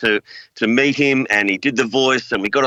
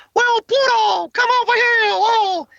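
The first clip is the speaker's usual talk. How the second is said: high squeaky voice with the oh stretched. Taking a turn in an impression game on Disney: bad Mickey Mouse voice. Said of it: "Very bad Mickey Mouse".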